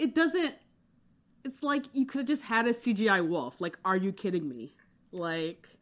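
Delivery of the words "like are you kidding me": plain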